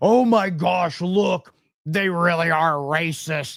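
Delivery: frantic, panicky, freaked-out outburst. Mocking leftists on Twitter reacting to a speech: imitating people freaking out. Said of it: "freaking out".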